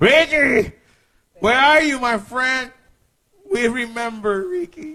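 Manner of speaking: high pleading put-on voice.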